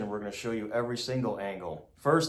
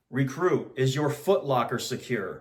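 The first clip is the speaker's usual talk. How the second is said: normal talking voice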